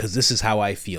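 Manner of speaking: ordinary talk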